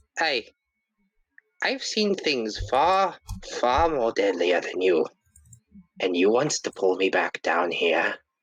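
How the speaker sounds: deeply unsettling, menacing, swooping voice. Voicing a character threatening a creature that grabs him: very unsettling tone. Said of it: "says with a very, a very unsettling tone".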